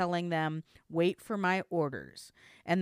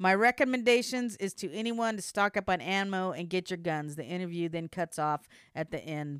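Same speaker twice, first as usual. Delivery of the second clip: usual speaking voice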